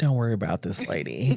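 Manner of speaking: soft, hushed, discreet stage whisper. Retelling what a police officer said on walking up: imitating a half-whisper. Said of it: "walks up to me and whispers".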